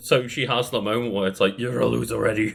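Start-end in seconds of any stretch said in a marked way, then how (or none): 1.6-2.5 put-on demonic voice. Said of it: "the Venom voice".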